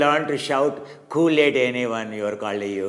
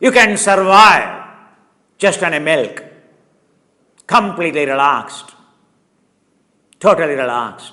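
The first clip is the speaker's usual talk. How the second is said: full-throated, very loud, high shouting; 6 semitones higher, 9 dB louder than usual. Speaker addresses listeners, admitting he is shouting at them; shouting. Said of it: "because I am shouting at you".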